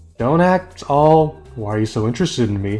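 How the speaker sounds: ordinary talk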